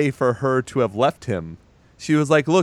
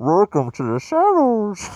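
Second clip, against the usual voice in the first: muffled, higher voice as if through cupped hands; 8 semitones higher than usual. Repeating a line as it was remembered, speaking through a cupped mouth. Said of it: "you kind of have to cup your mouth like this".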